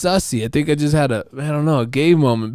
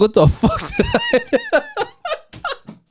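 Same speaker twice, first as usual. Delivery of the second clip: mock giggly, very high, very drawn out, laughing disbelief. Retelling own words after a weird remark: retelling own laughing words. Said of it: "I couldn't stop laughing".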